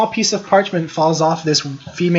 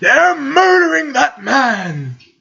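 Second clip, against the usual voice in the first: put-on high, swooping old-man yell, shouting; 9 semitones higher, 3 dB louder than usual. Describing witnesses reacting to a killing, old men yelling. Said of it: "a couple of old geezers yelling".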